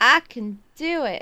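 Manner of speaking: slight southern twang, a touch of drawl. Agreeing to read the passage aloud in a moment, slight southern twang. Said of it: "That had a little bit of a southern twang in there".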